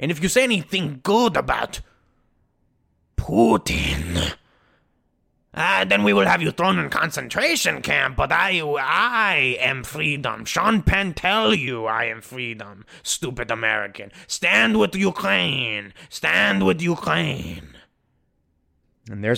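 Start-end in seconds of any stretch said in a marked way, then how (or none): 0.0-17.7 put-on Ukrainian-accented voice. Mocking a politician in a comic impression: Zelensky impression. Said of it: "my little, uh, Zelensky impression".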